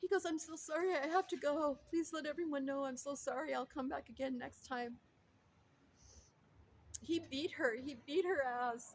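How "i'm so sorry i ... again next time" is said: put-on sobbing speech. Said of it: "he started sobbing, like, uncontrollably".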